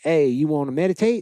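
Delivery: put-on rural Florida accent. Speaker retells the meditation center abbot greeting them: imitating a country accent. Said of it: "he has a country accent".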